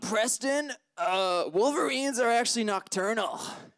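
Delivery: easygoing, relaxed, casual talking voice. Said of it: "Here's an impression of my, uh, friend [name]".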